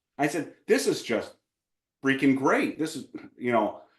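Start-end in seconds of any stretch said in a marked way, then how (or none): 0.7-2.8 heavy sarcastic delight, swooping and sing-song. Retelling what was said to a wife last night: retelling own sarcastic remark.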